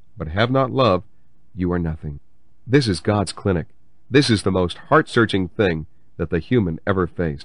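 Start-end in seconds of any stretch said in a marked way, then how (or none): 0.2-2.2 soft, mock-tender, gentle put-on delivery. Retelling what he says, the speaker delivers the words in a mock-tender soft voice. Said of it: "and he says it softly and tenderly".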